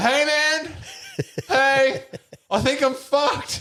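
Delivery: very high, swooping, drawn-out yell. Retelling yelling at someone on stage in church: imitating own past yelling. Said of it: "I'm like yelling at Kale".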